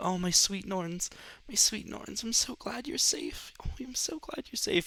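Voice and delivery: soft, tender, hushed whisper. A woman from the crowd takes the child from your arms, whispering. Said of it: "you just hear her whispering sweet nothings".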